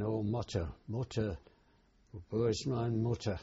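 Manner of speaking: plain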